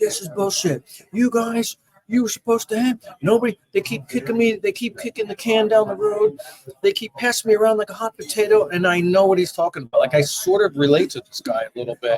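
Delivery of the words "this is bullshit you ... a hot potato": furious, angry ranting yell, pitched high. Recounting a man who started yelling at the speaker: retelling a man yelling. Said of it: "he starts yelling".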